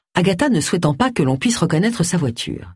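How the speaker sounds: plain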